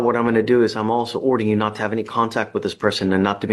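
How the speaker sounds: ordinary delivery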